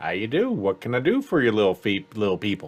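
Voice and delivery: put-on low, swooping, sing-song elderly old-man voice. A game master voices a barkeep greeting the players' characters, old man barkeep voice. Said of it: "an old man kind of lean over and goes".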